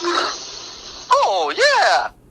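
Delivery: very high-pitched, cartoonish video-game sidekick voice. Doing a character voice on request for the public: Luigi voice from Mario. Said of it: "It's the wrong Luigi".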